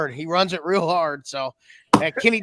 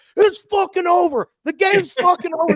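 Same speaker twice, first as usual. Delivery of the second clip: put-on scream, pitched higher; 13 semitones higher, 4 dB louder than usual. Retelling the coach screaming as people rush the field: imitating someone screaming. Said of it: "him screaming with his wife right behind him".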